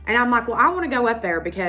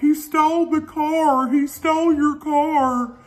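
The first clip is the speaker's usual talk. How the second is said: put-on crying, higher pitch; 6 semitones higher, 3 dB louder than usual. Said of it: "walking down the hill crying".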